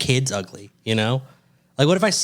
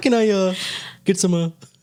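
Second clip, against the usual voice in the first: puppet frog voice, higher; 6 semitones higher than usual. Trying a Kermit the Frog voice when asked for a line. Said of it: "Trying to think of a Kermit the Frog voice".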